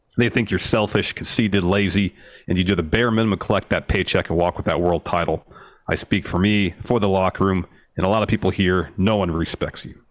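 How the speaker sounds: normal talking voice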